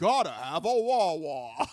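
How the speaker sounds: overdone, exaggerated British accent, very slow and drawn out. Quoting a guy who read sponsors at a game show marathon, overly British accent. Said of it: "he had that like overly British accent. He was like".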